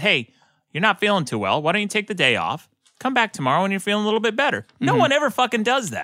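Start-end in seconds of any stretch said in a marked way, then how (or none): 0.0-4.6 very sympathetic, kind, concerned, caring tone. Acting out a boss sending a sick worker home, imitating a sympathetic boss. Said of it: "with very sympathetic tone and says".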